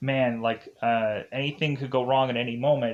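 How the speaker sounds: plain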